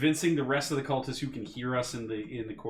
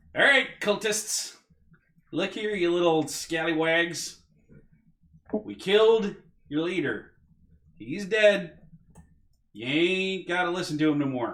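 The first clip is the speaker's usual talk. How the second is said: very loud, high, booming voice; 7 semitones higher, 6 dB louder than usual. A player's character addresses the cultists after killing their leader, in a very loud voice. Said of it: "Let me make my voice real loud".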